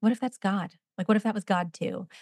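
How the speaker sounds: mock dry, flat, expressionless deadpan delivery. Retelling how he answered the speaker's lament about the day, retelling a deadpan remark. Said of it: "he looks at me like deadpan and is like".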